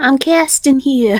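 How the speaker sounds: put-on Brooklyn Italian accent. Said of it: "Brooklyn Italian".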